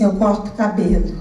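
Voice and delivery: very soft, very low, hushed murmur. Retelling how a man quietly answered a woman on the phone, speaking quietly. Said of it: "Aí ele falou baixinho assim".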